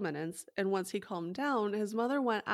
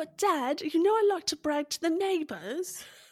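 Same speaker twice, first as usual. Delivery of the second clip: attempted Essex accent, pitched up; 9 semitones higher, 6 dB louder than usual. Acting out the son answering his dad, in an essex accent. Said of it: "Is that the Essex accent?".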